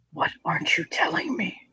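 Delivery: tense whisper through clenched, gritted teeth. Narrator voices a man questioning a woman, through gritted teeth. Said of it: "his teeth grit, and he leans forward".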